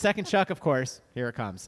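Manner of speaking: plain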